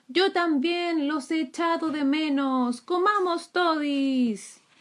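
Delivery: high storybook-style shout, todis drawn out. The dragon throws the basket of raspberries to the ground: shouted. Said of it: "gritó".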